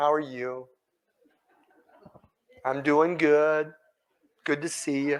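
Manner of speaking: slow, warm, sing-song, highly inflected, feeling-laden sappy delivery. Showing how much warmth and feeling inflection adds: slow, warm, highly inflected. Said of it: "slow rate, high inflection ... I'm being a little sappy just to make the point".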